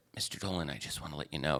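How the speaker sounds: put-on very quiet talk. Retelling a professor's phone call, quoting him talking very quietly. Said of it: "He was talking very quietly".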